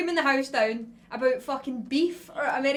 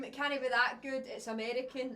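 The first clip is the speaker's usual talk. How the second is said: ordinary delivery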